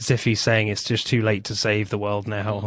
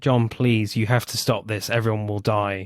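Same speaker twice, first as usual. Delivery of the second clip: put-on pleading tone. Retelling a scene where one character pleads with another: imitating a plea. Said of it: "she's pleading with him".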